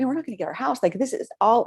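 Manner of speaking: mock frantic, fast, panicked spiraling worry. Retelling own words while a house sale fell through: retelling own panicked words. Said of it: "but I'm panicking".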